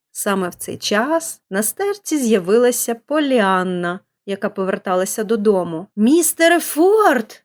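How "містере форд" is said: startled, high, loud, frightened outcry. A girl on her way home finds a pastor covering his face; frightened cry. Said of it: "злякано скрикнула вона".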